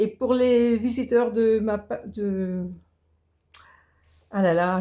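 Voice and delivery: slow, stumbling false start, tripping over words. Video host addressing first-time visitors, stumbling over words. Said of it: "je bafouille".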